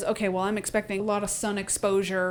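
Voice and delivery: ordinary talk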